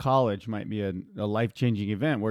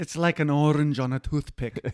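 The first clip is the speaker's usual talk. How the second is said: clumsy put-on Scottish accent, pitched up; 6 semitones higher, 3 dB louder than usual. Quoting a line while chatting with a co-host, in a bad accent. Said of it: "That was a bad accent".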